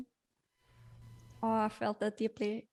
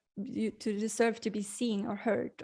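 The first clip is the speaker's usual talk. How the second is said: normal talking voice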